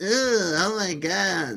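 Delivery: very slow, drawn-out nagging tone. Mocking how women talk, imitating a nagging voice. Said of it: "just don't go like".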